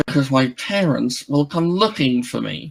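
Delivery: spoken through clenched jaw and gritted teeth. Voicing Yuki answering why she is so concerned: through gritted teeth. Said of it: "she just says through gritted teeth".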